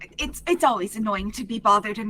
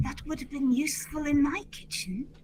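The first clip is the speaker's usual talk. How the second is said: quiet, hushed, pitched-up voice; 5 semitones higher, 4 dB quieter than usual. In the game, a player's character leans to a neighbour: very quiet half-whisper. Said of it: "very quietly whisper".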